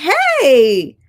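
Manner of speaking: very high-pitched, loud, drawn-out, falsely friendly tone. Retelling a phone call with Kimmy: imitating a high-pitched voice. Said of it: "That high-pitched voice".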